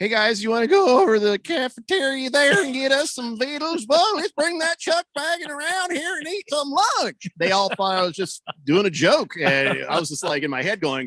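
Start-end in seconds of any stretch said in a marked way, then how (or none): 0.0-7.3 very high, strange, made-up voice, rising pitch. Recalling hiding puberty voice cracks from friends, slipping into a weird put-on voice. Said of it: "I would just bust into some weird voice. Like I'd say".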